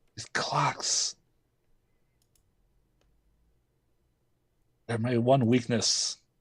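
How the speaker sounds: pained voice, hurting badly, in agony. A winter goddess struck by a terrible migraine from the clocks: pained, in agony. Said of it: "she has like this terrible migraine".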